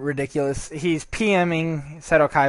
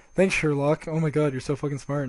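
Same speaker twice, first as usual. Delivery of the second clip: put-on sarcastic tone; 3 dB quieter than usual. Retelling an opponent's insult during a duel: imitating a sarcastic remark. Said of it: "He's being sarcastic asshole".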